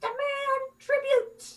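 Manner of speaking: very high, piercing, shrill goblin voice. Narrator voicing a goblin that has just spooked the horses, in a very shrill goblin voice. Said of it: "in a very shrill voice says".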